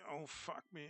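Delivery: groaning in pain. Painting while the back hurts, in pain from back ache. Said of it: "My back is killing me".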